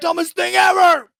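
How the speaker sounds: pretend yelling and screaming. Picturing reviewing a hated movie for the podcast: pretend yelling and screaming. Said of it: "a solid hour of me just yelling and screaming".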